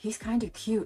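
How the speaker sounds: whispered voice. Retelling what a friend said about the guy: imitating a whisper. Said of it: "She was literally whispering to me".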